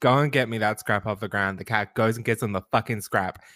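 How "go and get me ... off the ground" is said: ordinary talk, nothing marked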